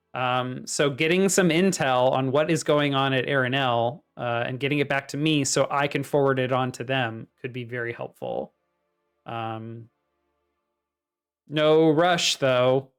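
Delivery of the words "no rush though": deadpan, dry, sarcastic throwaway aside. After asking for intel to be sent back, speaker adds a remark: sarcastic. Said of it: "she says sarcastically".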